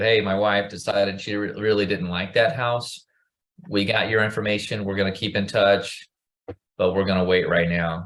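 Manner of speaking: normal talking voice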